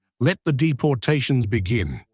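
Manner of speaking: ordinary talk, nothing marked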